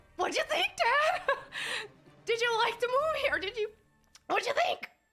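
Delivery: very high voice, holding back tears. Retelling asking dad about the anime: imitating holding back tears. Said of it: "I'm holding back tears".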